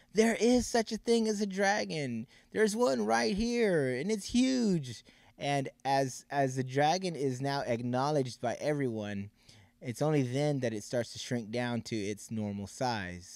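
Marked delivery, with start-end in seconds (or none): 0.2-5.1 high, exasperated, frustrated shout, hugely drawn out. Retelling a story where the frustrated boy finally answers: imitating a frustrated shout. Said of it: "he finally shouts".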